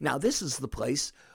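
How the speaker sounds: ordinary delivery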